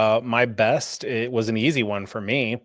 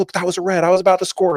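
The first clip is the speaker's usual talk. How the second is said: high, loud screaming; 8 semitones higher, 5 dB louder than usual. Retelling a player's reaction to a red card, imitating Herrera screaming. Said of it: "gets up and screams like".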